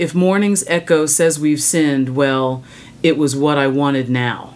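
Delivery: normal talking voice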